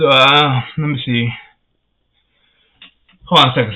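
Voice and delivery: out of breath, short of breath. Video host apologising to viewers for pausing, out of breath. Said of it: "I get short out of breath".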